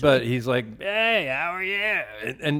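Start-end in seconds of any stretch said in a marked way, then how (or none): 0.8-1.7 offhand, casual, higher-pitched voice. Retelling how a famous man greeted back on the street: imitating Dusty's voice. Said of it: "You can do him pretty good".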